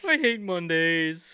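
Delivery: very high-pitched cartoon cat voice. Joking about Garfield in a game of charades: Garfield voice. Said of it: "Yeah, Garfield".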